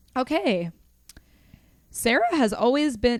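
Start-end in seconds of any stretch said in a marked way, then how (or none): 1.9-3.2 breaking voice, cracking partway. Speaker starting a line before asking to retake it, voice cracking. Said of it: "not have my voice crack".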